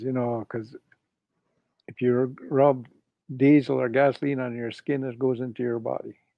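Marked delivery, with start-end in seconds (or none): none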